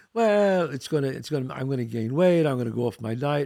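normal talking voice

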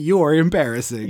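ordinary delivery

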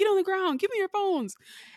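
acted-out, very high, shrill screaming. Telling about a man robbing a nail salon, the speaker is retelling his screaming. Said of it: "he started screaming at everybody".

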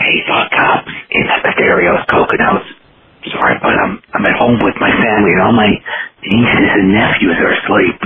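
low stage whisper at normal talking volume. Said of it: "my stage whisper is as loud as a normal person's talking".

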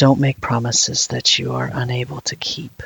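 hushed whisper, close to the ear. Narrating a game scene, a character hugs the player, whispering in their ear. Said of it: "he whispers in your ear".

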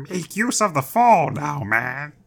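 high-pitched, slow, dragged-out character voice. Reading a troll's line from the story aloud: Grover voice. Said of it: "Why do all of your trolls sound like Grover?".

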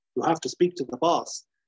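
ordinary talk

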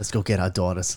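put-on Brooklyn accent. Joking with friends about accents, the speaker says a line in a brooklyn accent. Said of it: "That's Brooklyn".

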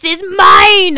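high, loud, slow booming shout.

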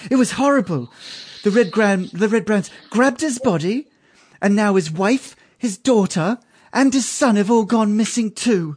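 impassioned high voice. Voicing the innkeeper's wife speaking to a player: passionate voice. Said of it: "there's a lot of passion in this woman's voice".

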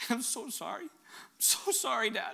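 hushed, slow, drawn-out whisper through tears. A father acts out his kids apologizing to him, imitating a tearful apology. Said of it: "my kids look in my eyes with tears".

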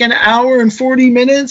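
play-acted crying, high and tearful. Retelling asking a waiting woman how long she waited, imitating a woman crying. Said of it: "she's like crying".

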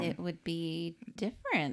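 plain

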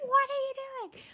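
mock high-pitched screaming outburst. Retelling a dining room argument, imitating own past screaming. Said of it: "dining room screaming".

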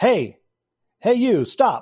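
high-pitched shouting, calling out loudly. Narrating a tabletop scene, voicing a man who spots a player's character: shouting. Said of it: "and he shouts".

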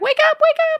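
very high, loud, panicked pleading. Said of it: "Macy's like".

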